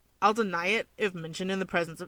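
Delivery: ordinary delivery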